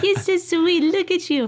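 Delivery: put-on very high baby talk.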